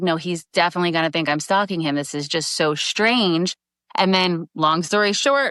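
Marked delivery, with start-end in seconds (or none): none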